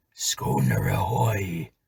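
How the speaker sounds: throaty, inhuman calling voice. Reading a sea story, voicing a call from the dark sea, throaty inhuman voice. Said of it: "a voice curiously throaty and inhuman".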